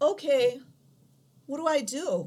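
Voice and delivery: high-pitched, put-on little kid's voice. Acting out a Dianetics session, playing the child, in a child voice. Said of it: "I'm going to emulate a child voice".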